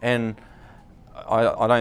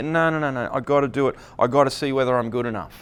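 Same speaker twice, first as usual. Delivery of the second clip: usual speaking voice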